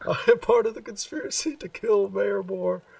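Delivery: put-on scream at full volume. Recounting what a man kept yelling over and over, retelling a scream at top of lungs. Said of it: "screaming at the top of his lungs".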